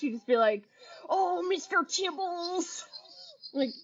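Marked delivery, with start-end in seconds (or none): 1.1-2.8 dopey, high, dumbest-sounding silly voice. Repeating what the teacher said: imitating the teacher's dumbest voice. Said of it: "she had the dumbest voice".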